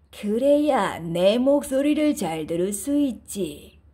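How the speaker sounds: low, fake grandma voice. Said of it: "늑대가 할머니 목소리를 흉내내어 대답했어요".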